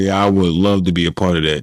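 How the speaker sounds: ordinary talk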